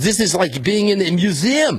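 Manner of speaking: put-on French accent. Retelling what a man in a parking lot said, in a put-on french accent. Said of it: "I'll do a French accent".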